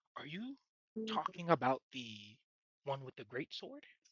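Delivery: very hushed, secretive, leaning-in half-whisper, barely any breath. A narrator voices a man who leans in to ask about the Beastman, half-whispering. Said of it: "he leans in and whispers".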